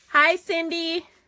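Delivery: high, loud voice calling out. Live on Facebook while painting, greeting a customer who just arrived, yelling a greeting. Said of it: "I didn't mean to yell into you guys".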